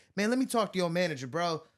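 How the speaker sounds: play-acted snappy, snapping, complaining tone. Retelling a customer who demanded the manager: imitating someone snapping. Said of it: "snapping at this bartender".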